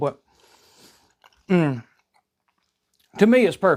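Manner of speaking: speaking through a full mouth. Tasting the toast on camera, talking with mouth full. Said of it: "my mouth's full".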